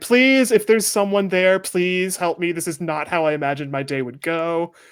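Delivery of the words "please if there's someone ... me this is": shouted, raised, pitched-up pleading voice. Voicing a person pinned behind cover, calling out: person shouting for help. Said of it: "you can hear the person shouting".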